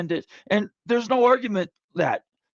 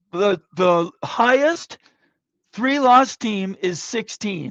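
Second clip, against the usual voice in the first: slowed down, deliberate delivery. Repeating a point to listeners so everyone follows, slower. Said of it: "Let me say that slower".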